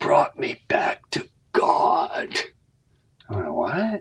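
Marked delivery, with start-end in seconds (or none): 0.0-2.4 put-on intense delivery. Retelling what a crying man told you when asked if he was okay, imitating intense delivery. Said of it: "he said it with such great intensity".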